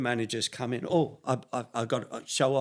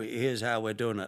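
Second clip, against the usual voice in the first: put-on Yorkshire accent. Imitating an old-fashioned manager talking to his players: Don Revie impression, Yorkshire accent. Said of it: "typical Yorkshire".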